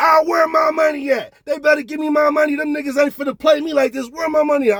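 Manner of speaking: mock high-pitched woman yelling and screaming. Retelling a woman in his hotel room yelling for her money: imitating a woman yelling. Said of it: "yelling and screaming".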